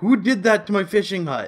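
high, loud, outraged yell.

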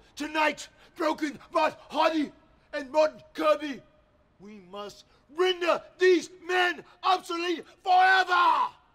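pompous, grandiose, wrestling-promo style battle-cry proclaiming. Speaking to someone standing right next to them: shouting. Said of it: "What are you shouting for?".

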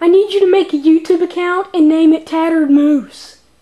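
high, very loud toy voice. A stuffed moose toy answers the people asking what it wants: Tattered Moose toy voice. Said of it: "Is that a moose? Yeah, dude, it looks like it's been beat up a little bit. Its eyes are gone".

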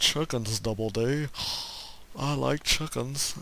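horrible, clumsy cartoon character voice. Speaker quotes a character from a favorite childhood show, horrible Ed impression. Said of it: "That was a horrible impersonation of him".

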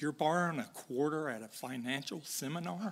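dry, soft, sarcastic delivery. Retelling a reply to an older man asking for a quarter at a seminar: sarcastic quip. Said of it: "I have this sarcasm gift".

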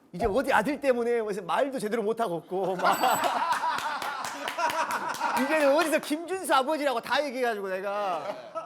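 put-on high-pitched voice, said while laughing.

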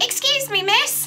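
high-pitched voice. Narrating an adventure to a listener, voice a rat calling someone over in a high-pitched voice. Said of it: "in a high-pitched voice".

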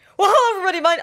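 voice cracking. Greeting everybody, voice cracking. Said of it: "Why did my voice crack?".

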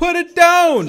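very high, very loud half-yell, just short of yelling. Imitating Seagal ordering Santa, at gunpoint, in a movie: Seagal half-yell impression. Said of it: "He sounds like he's trying to yell".

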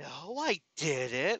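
mocking, sarcastic, swooping delivery. Acting out her sarcastic denial: imitating her sarcastic tone. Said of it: "sarcastically like that".

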